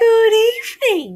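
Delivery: very high silky voice. A second monster appears and greets the narrator: high, silky voice. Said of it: "he said in a high, silky voice".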